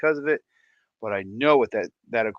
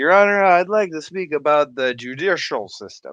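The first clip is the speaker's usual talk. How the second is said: put-on loud, sloppy, slurred drunk voice; 5 semitones higher, 7 dB louder than usual. Retelling a comedy sketch, addressing a judge while imitating sounding drunk. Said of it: "without saying sounding drunk".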